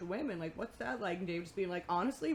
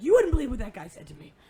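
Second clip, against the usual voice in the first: mock furious, high, very loud outburst; 5 semitones higher, 14 dB louder than usual. Retelling what Dave said coming out to the van, imitating furious Dave. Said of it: "Dave comes out furious".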